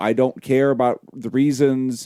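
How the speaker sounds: normal talking voice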